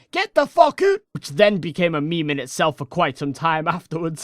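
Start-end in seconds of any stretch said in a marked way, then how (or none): 0.1-1.0 put-on very high, loud yell in a Scottish accent. Retelling a friend yelling at the group to leave: imitating Scottish yelling in a Scottish accent. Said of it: "Scottish yell at us in the fucking accent".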